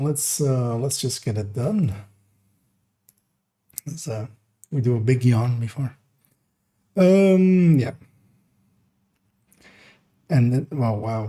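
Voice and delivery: rough, scratchy, hoarse voice. Just before getting started, the speaker notices a raspy voice. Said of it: "my voice is very raspy".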